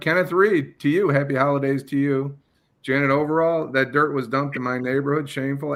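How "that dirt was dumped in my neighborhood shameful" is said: ordinary talk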